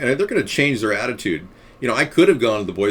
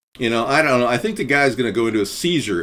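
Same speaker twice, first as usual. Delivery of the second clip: usual speaking voice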